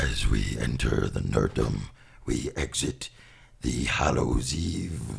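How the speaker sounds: very low, creaky, drawn-out eerie voice. Retrying an opening line after a false start, the speaker uses a spooky voice. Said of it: "spooky voice".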